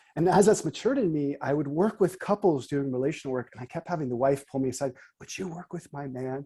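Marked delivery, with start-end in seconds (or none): 5.2-6.5 quiet, hushed, private stage half-whisper. Quoting a wife who pulled the speaker aside during couples work, retelling a half-whispered request. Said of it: "I'm kind of whispering here".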